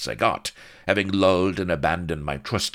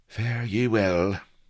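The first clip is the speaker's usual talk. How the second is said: quivery, wavering, trembling voice, pitched up; 5 semitones higher than usual. A narrator voices a character who has just begged her ladyship's pardon: quivery voice. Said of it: "said he in a quivery voice".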